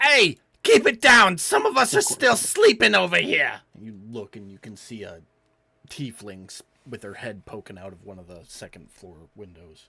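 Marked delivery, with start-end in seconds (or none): 0.0-3.6 very high, very loud, shrill, swooping yelling. Voicing a woman behind the players, annoyed by their yelling: tiefling woman yelling to keep it down. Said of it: "you hear a woman's voice".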